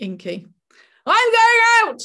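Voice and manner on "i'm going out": very loud, shrill, high-pitched yell. Reading a story line to show what a difference a word makes, shouted. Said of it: "shouted Inky".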